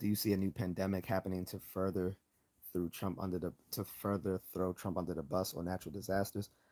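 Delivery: ordinary delivery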